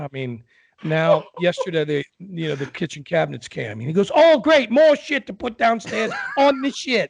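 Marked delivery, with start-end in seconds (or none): 4.1-7.1 very high, put-on, sarcastic grumbling voice. Retelling what Steven said when the kitchen cabinets came: imitating Steven. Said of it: "your imitation is spot on".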